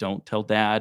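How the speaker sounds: put-on sobbing, pleading voice. Retelling a plea not to tell Dad: retelling a sobbing plea. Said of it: "I'm distraught and I'm sobbing and I'm like".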